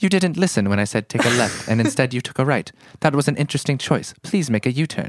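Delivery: put-on polite British navigation-system voice. Recalling a BMW's British GPS lady, speaker uses a polite British BMW GPS voice. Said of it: "She was very British too".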